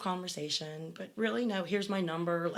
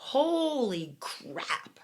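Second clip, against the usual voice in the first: mock sudden high scream, drawn-out holy; 5 semitones higher, 3 dB louder than usual. Retelling how the sister-in-law opened the door: imitating someone screaming. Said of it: "and she screams".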